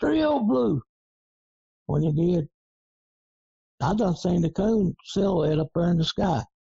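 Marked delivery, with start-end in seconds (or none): 0.0-0.8 mock, very high-pitched, far-carrying holler. Retelling a hunt where a guy hollered while climbing a fence: imitating someone hollering. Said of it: "one guy hollered".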